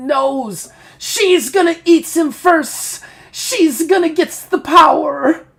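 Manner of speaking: very shrill, loud, nasal, stretched-out creature wail. A game narrator voices the Fanged one crawling toward a player, whining creature voice. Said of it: "he starts to whine and go".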